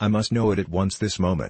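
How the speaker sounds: ordinary delivery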